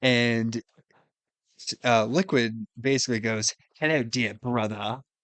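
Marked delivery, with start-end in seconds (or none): 3.8-5.0 put-on campy villain voice with British accent. Describing a game scene, the speaker quotes Liquid Snake: campy British villain voice. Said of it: "super campy British villain".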